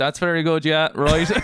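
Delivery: polite, agreeable, humoring tone. Teasing the other speaker for sounding like a dad, imitating a polite dad. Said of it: "you sound like a dad who goes".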